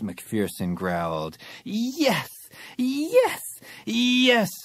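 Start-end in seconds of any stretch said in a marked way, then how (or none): 1.6-4.5 shrill, very high group squeal in unison. A narrator reads a whole group answering at once, squealing. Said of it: "Squealed everyone".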